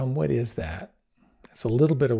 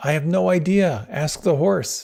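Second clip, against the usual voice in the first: put-on raised, pitched-up, hollered yell; 6 semitones higher, 5 dB louder than usual. Retelling how the rider answered: imitating a rider yelling back. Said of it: "yells out".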